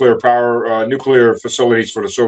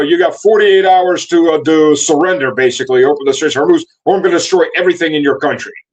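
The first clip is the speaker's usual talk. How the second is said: pitched-up, screaming, ranting delivery; 5 semitones higher than usual. Retelling a threat to destroy a country: imitating someone screaming. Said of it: "he's screaming".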